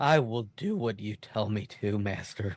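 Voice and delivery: small, whiny little voice. Imitating a scene with a whiny little voice imitating Hayden Christensen. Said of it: "in his perfect whiny little voice".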